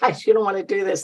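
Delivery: acted laughing while speaking. Retelling a reply to two young guys offering a job: retelling own laughing reply. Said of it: "And I'm laughing".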